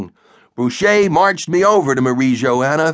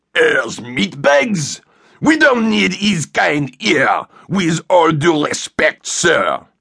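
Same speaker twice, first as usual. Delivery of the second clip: put-on thick, laid-on-heavy French accent; 2 semitones higher than usual. A narrator voices Boucher answering a superior about a new sergeant: Boucher's thick French accent. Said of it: "spoke with a Frenchy accent as thick as cheese fondue".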